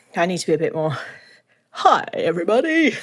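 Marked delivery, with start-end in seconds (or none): 1.7-2.9 radio dj announcer voice, pitched up. Podcast host greets listeners, trying out a radio DJ voice. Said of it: "I feel like I need to make more of a D J voice".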